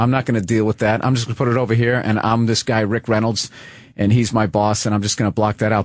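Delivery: ordinary talk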